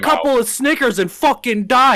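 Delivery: mock high-pitched shrieking, screaming yell. Retelling a clash, the speaker acts out the man beside him, retelling a scream. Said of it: "And just screams it".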